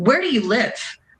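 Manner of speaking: mock, harsh, strongly interrogating tone. Retelling how a border agent questioned the fiance: imitating an interrogating tone. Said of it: "in a very interrogating tone".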